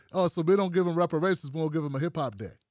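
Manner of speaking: normal talking voice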